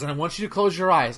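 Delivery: put-on deadpan, straight-faced voice. Retelling a dad's trick on his sons: imitating dad's straight-faced voice. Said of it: "just straight edge".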